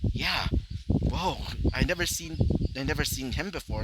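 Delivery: ordinary delivery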